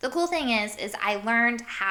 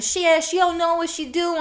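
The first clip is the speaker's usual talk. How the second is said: loud, pitched-up put-on New York accent; 9 semitones higher, 5 dB louder than usual. Speaker imitating a New Yorker talking to people behind him, in a New York accent. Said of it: "that's my New York accent".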